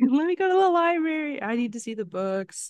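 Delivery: full fangirl gush, pitched way up. Retelling a story where a character goes full fangirl: imitating a full fangirl. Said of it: "she goes like full fangirl".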